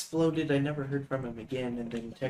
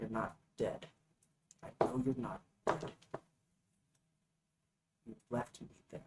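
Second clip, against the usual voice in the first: soft, breathy whisper, barely voiced, under the breath; 9 semitones higher, 7 dB quieter than usual. Hosea has just cracked his head onto the desk, anger rising in him; Hosea whispering. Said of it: "he whispers. He's just like".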